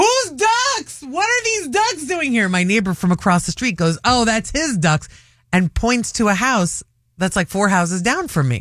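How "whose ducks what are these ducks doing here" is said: put-on, very high, shrill holler. Retelling finding strange ducks before leaving to get Josh at school, yelling. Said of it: "So I'm yelling it".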